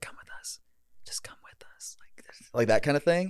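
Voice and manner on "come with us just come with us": faint, barely audible, breathy whisper. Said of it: "I could hear, like, whispering".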